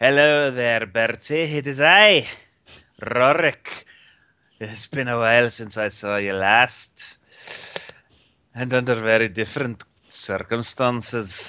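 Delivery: badly butchered, mangled Irish accent. A player voices Rorik greeting Bertie on the docks, in a butchered Irish accent. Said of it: "watch as the Icelander butchers the Irish accent".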